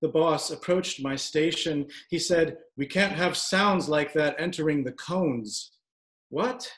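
ordinary delivery

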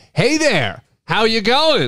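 friendly American voice. Retelling how a stranger greeted the woman behind the counter, imitating an American guy. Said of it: "this American guy walks up".

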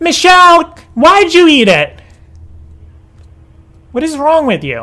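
high, swooping yell sounding disbelieving. Confronting someone who ate it, yelling. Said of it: "Why are you yelling at me?".

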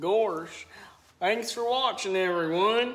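very loud cartoon dog voice. Asked for his Goofy, the co-host signs off the video, Goofy voice. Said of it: "You've got a pretty good Goofy".

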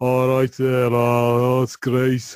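harsh, guttural Scouse accent. Showing how people from the poor north of liverpool talk: guttural scouse accent. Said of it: "very guttural".

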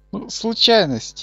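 high slow flustered babble.

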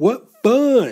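high, loud giggle, laughing lightly through words. Reading a children's story aloud, the narrator gives the shark's line, giggling. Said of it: "giggled Smiley Shark".

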